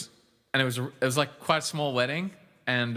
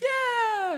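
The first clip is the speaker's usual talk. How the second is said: very high, drawn-out put-on screaming. Retelling the wedding crowd's reply, imitating a crowd screaming.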